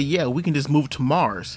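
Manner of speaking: ordinary talk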